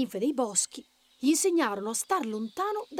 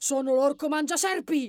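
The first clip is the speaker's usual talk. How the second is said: huge booming ogre voice, yelled out; 2 semitones higher, 4 dB louder than usual. A narrator reading a story, the bunny shouting at a snake, shouting in a big voice. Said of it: "gli gridò con un vocione".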